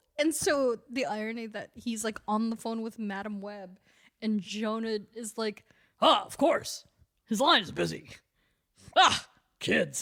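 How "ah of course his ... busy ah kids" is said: loud, booming, boomed-out voice. Retelling a comic scene where Jonah talks on the phone: J. Jonah Jameson impression. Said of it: "I don't know how my voice works".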